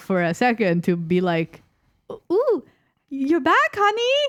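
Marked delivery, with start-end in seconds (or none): 2.1-4.3 very high, pitched-up put-on female voice. Acting out a cutscene line, high-pitched woman's voice. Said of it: "I have a woman voice. I don't know why I pitched it up".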